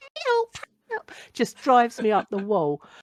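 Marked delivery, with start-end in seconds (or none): 0.3-1.1 very high cartoon damsel cry. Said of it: "she sounds like Penelope Pitstop".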